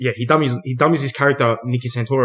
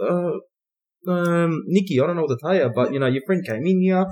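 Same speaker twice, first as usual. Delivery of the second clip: play-acted hesitant, meek, innocent voice, pitched up; 5 semitones higher, 4 dB quieter than usual. Retelling a movie phone call, imitating an innocent puppy-dog tone. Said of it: "all this fucking innocent little puppy dog".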